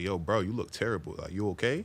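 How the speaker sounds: plain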